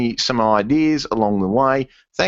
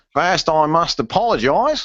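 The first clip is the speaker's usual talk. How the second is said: put-on Australian accent, read aloud; 4 semitones higher than usual. Reading out a message sent in by Phil in Australia: reading as Phil, Australian accent. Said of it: "chance for an Australian accent now".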